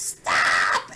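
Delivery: loud, whiny, annoying shout. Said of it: "in his whiny, annoying voice".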